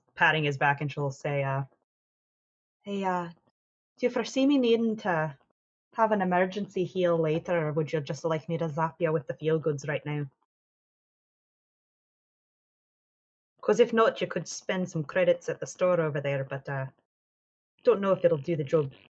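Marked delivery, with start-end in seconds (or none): 2.8-18.9 soft whispered delivery. Voicing a character leaning close to a heaving companion: whispering in his ear. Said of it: "she'll lean over and whisper in his ear".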